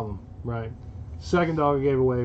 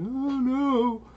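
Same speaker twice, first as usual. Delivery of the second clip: high, squeaky frightened dog voice. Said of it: "he's just like".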